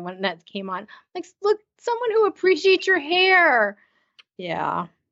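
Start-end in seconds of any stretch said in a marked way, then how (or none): 1.4-3.8 high-pitched, gushing, awed delivery. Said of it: "I was, like, awing from the living room".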